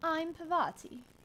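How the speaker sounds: sturdy, firm voice. Comparing how the characters sound, doing Parvati: sturdy Parvati voice. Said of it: "She's got more of a sturdy voice".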